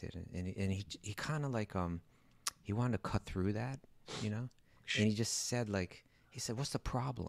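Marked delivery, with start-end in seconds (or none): 6.6-7.3 mock New York delivery, higher and quieter. Retelling a teacher's blunt answer about meditation: imitating a blunt New Yorker. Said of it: "Like that".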